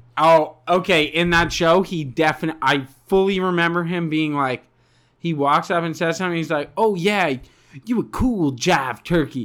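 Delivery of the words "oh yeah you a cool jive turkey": jazzy jive-talking put-on voice, laid on thick.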